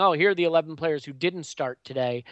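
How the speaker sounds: plain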